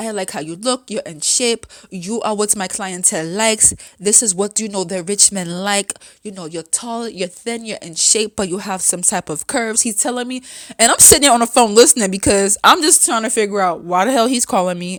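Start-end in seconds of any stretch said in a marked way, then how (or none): 0.0-9.8 heavy, strong, laid-on put-on Russian accent. Retelling a phone call from a man from russia: imitating a strong russian accent. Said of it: "a strong accent".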